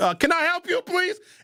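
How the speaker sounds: very high-pitched, sassy voice with attitude. Retelling answering the door to a cop: imitating himself answering with attitude. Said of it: "answer the door with as much attitude as I can muster".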